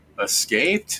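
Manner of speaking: escaped with rising pitch at the end. Retelling a message delivered at the clan door, questioning rise on escaped. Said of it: "He made it sound like a question".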